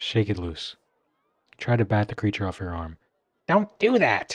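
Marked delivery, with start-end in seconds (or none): 3.5-4.4 very high, shrill, squeaky little complaining voice. A creature on your arm complains as you try to bat it off: shrill squeaky voice. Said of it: "it complains in a shrill and squeaky voice".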